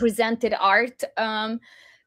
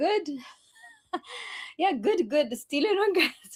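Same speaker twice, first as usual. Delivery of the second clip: high voice, laughing while talking; 7 semitones higher, 4 dB quieter than usual. Guest in hong kong answering the host's greeting, laughing while talking. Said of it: "I'm laughing because of the repetition".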